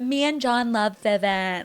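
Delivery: put-on bubbly, upbeat-sounding voice. Retelling a brand trip speech, imitating Lisa Barlow. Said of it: "that's such a good voice".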